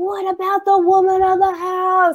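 acted-out screaming. Recounting a guy asking for the man of the house; retelling a scream. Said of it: "screaming it".

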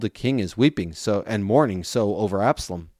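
ordinary delivery

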